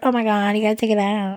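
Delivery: put-on valley girl way of talking. Speaker mocking a type of person mid-conversation: put-on valley girl voice. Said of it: "I don't know why I did that voice".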